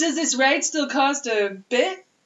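put-on seventies advertisement child voice. Describing a kid he met in line, speaker does a 70s commercial kid voice. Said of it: "he's like a commercial from the 70s".

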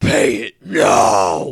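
very loud, booming, raspy, swooping yell. Acting out Batman arriving to demand a fine: Batman voice. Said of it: "Batman shows up, and he's like".

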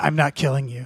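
whispering voice. Acting out a character's actions in a game: whispering. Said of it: "the whole time I'm whispering".

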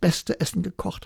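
ordinary delivery

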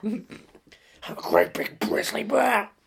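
slow, phlegm-clogged, throaty voice. Showing what Nick Nolte sounds like, pushing phlegm: Nick Nolte impression. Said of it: "That's what Nick Nolte sounds like".

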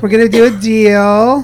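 put-on Hollywood-style accent. Mocking how Hollywood people talk when they're working, in a Hollywood accent. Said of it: "that's like the accent of Hollywood right now".

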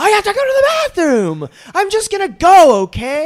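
very high, very loud, shrill, drawn-out screamed outburst. Retelling how a woman screamed at a man who refused her entry without a ticket. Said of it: "she just screamed".

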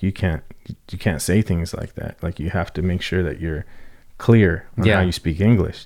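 normal talking voice

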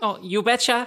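bad put-on Fargo accent, pitched high. In a tabletop game, a player voices a character sending a package: bad Fargo accent. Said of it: "That's Fargo".

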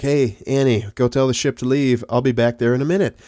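ordinary talk

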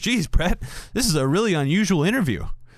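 put-on sarcastic, mocking tone, jittery and nervous underneath. Retelling what a man told the interviewer during a tv interview; quoting a mocking remark. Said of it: "Like mockingly".

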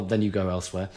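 normal talking voice

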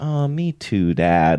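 acted, very slow, tender, sorry, loving sympathy. Recalling how a woman said it to her dad, retelling it in a loving way. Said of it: "she really felt bad and it was said in a well, very loving way".

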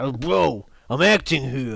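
mock hissy fit. Recounting an actor annoyed by a man on his phone, imitating a hissy fit. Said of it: "he gets a bit of a hissy fit".

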